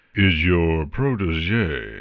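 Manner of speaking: deep resonant rumble, "protege" drawn out. Narrator reads his line about Twilight's passenger: deep resonant rumble. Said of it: "he rumbled, his voice deep and resonant".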